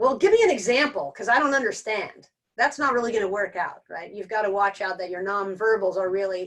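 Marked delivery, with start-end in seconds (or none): 0.0-2.3 rude, jerky tone. Showing how not to ask a question in a conflict: said like a jerk. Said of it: "if I say it like a jerk".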